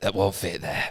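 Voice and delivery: hushed whisper. Acting out the zookeeper's line in the scene: whispering. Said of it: "She whispers it as well".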